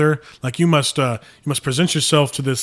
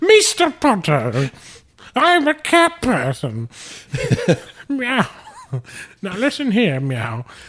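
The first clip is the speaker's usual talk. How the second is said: put-on high, swooping, sing-song old British lady voice; 9 semitones higher than usual. Joking about McGonagall with the others, in a Maggie Smith impression. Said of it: "It sounded like Maggie Smith to me".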